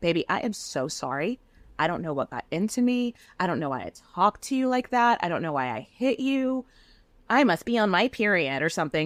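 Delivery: sugary, sweet, doting apologetic voice. Retelling how she spoke once in the hotel room: imitating a doting spouse. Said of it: "she turns into, like, doting spouse and is like".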